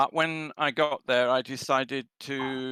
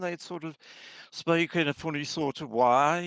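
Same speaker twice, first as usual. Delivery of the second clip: put-on Birmingham accent; 3 semitones higher than usual. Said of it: "they talk like this all the time".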